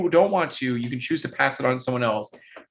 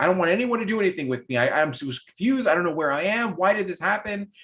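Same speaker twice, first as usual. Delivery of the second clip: frantic, hysterical, high rattled-off babble; 6 semitones higher than usual. Voicing a confused, curled-up character in a game scene: hysterical. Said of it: "keeps rattling on and is very hysterical".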